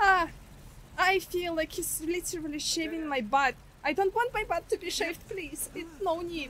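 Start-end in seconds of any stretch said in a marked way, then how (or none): 1.0-6.5 high, whining, pleading grumble. A player pleading with the game while being attacked, whiny. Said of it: "I'm a very whiny person".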